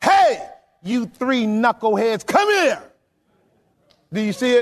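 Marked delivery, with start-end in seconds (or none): 0.0-2.8 stern, commanding fatherly voice. Voicing the Lord as a father calling his kids: stern father calling his kids. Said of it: "The Lord is like Big Papa".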